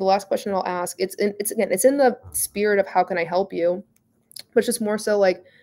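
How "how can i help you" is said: ordinary talk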